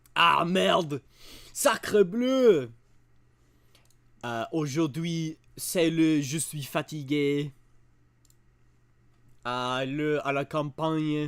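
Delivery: bad, exaggerated, slow put-on French accent. Starting a Wheel of Accents challenge, getting into a bad French accent. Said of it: "I need to get into the accent".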